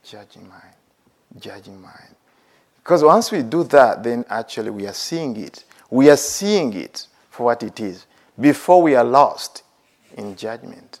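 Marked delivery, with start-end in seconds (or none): 0.0-2.2 very quiet, soft, gentle, tender voice. Guiding a meditation, demonstrate noting the judging mind softly. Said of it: "You want to have that softness".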